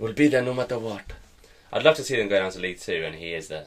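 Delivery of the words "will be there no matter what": higher, put-on, very obvious Spanish accent. Showing someone how to do a good accent, put on a Pep Guardiola accent. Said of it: "this is how you do a good accent".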